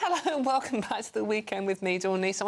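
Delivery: laughing while speaking. Welcoming viewers back while eating cake: giggling while talking. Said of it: "I'm sorry I'm giggling".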